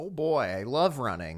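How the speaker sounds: openly sarcastic tone, fake enthusiasm. Reacting to the plan of running a marathon together: sarcastic. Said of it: "he said sarcastically".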